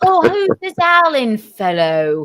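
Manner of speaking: high, slow, mock Cockney accent. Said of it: "All I could do is Cockney".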